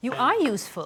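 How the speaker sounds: clear note of surprise. Reacting to someone's pepper-cutting trick, surprised tone. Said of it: "Was that a note of like surprise in your voice?".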